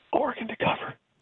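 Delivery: hushed whisper. Sharing a game pick after saying let me whisper this, whispered. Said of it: "let me whisper this".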